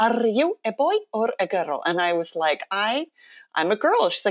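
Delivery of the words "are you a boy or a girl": put-on speaking with an Icelandic accent. A seven-year-old girl walks up and questions the speaker, in her little Icelandic accent. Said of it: "She's in her little Icelandic accent".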